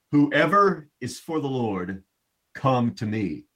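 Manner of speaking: shouting as loud as possible. Retelling Moses at the gate of the camp calling out, Moses shouting like a megaphone. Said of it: "picturing him using his megaphone voice here".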